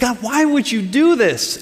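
angry, upset, high-pitched outburst. Acting out someone complaining to God: imitating someone angry at God. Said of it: "Angry, upset, mad at God".

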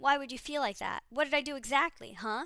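mock aggressive, defensive snarl, high, loud and nasty. Retelling how a woman lashes back at Cole, retelling a nasty snarl. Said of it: "She snarls nastily".

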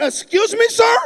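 indignant, taken-aback, offended, loud and high. Retell a man's reaction to being asked for his anointing and blessing, imitating an offended man. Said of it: "Dr. Miles Monroe got so offended".

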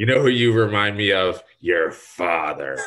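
very loud, nasty, really mean evil voice. Quoting what she always said about the speaker's dad, in a mock-mean, evil voice. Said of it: "in a really, really mean and, and evil voice".

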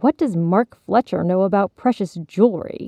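ordinary delivery

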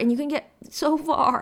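voice cracking. A speaker describes a daily habit they've committed to: voice cracking. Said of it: "my voice cracked there".

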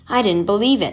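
ordinary delivery

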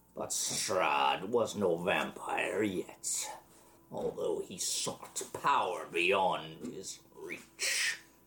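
scary, menacing undead lich voice. A game master voices a lich recalling the past to the players: scary lich voice. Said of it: "it's a lich. ... But he's still scary as hell".

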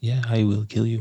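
close, hushed, threatening half-whisper. Acting out how a parent could answer a kid: put-on half-whisper. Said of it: "Just whisper at them".

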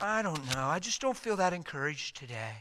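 acted quiet, downcast, solemn, bummed-out voice. Retelling a Bible scene, speaking as the Lord answering Peter, mock-solemn, bummed out. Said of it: "He's just kind of solemn".

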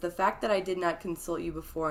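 plain

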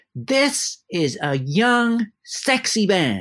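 very slow, grand, swooping, sing-song theatrical delivery. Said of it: "a very theatrical voice".

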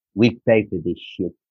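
put-on speaking with South African accent. Retelling what she said while you were both soaking wet, in a South African accent. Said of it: "in this South African voice, Namibian voice".

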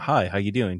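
smooth, easy, easygoing delivery. Imitating the opening phone call from the movie: smooth Roger Jackson voice. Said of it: "So smoothly".

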